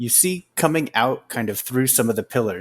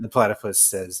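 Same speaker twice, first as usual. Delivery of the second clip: ordinary talk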